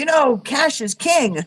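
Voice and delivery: high, loud, called-out yell. Retelling what the dry cleaner's husband called out: imitating someone yelling. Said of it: "he yells out".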